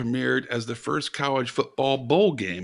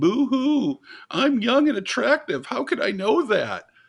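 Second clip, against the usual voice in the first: very high, whiny complaining; 11 semitones higher than usual. Mocking a younger trivia teammate's complaints: Calvin impression, whining. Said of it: "That was my Calvin impression".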